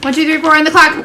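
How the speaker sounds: fast, loud, rapid, rushed out in one go. Counting to four on the clock: counting very fast. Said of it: "I needed to say it so fast".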